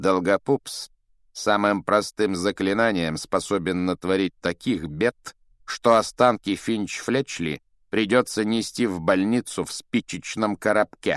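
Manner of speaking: ordinary talk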